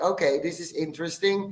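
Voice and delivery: ordinary talk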